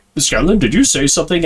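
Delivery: mock-confused delivery. Retelling what a confused character asked a companion; imitating a confused question. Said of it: "a little confused about like".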